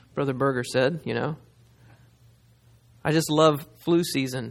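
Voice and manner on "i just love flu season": ordinary talk, nothing marked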